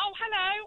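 very high, squeaky, excited voice. Answering the radio host's greeting on a call: higher-pitched voice than expected. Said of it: "that was a higher, higher pitched voice".

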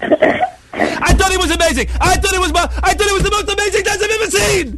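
acted-out, gushing, very high shriek of excitement. Retelling a judge banging the table: imitating someone shouting excitedly. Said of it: "and he's shouting".

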